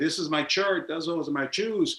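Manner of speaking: put-on strong, heavy Mexican accent throughout. Speaker recalls how they spoke as a painfully shy child: heavy mexican accent. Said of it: "I had a heavy Mexican accent".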